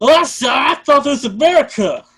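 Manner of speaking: very high, very loud, shrill outburst. Joking about a TV show: Randy Marsh impression. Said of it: "that was my impression of Randy Marsh".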